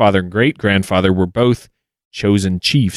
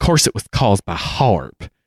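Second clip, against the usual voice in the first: put-on Southern American woman's accent. Retelling a conversation with a woman, in a southern woman's voice. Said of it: "I'm going to do this in a southern woman's voice".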